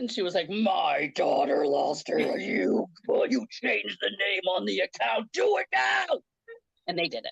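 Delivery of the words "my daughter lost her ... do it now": slow, creaky, rough commanding voice. Retelling her mom demanding an account name change, in a Darth Vader voice. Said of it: "this Darth Vader voice".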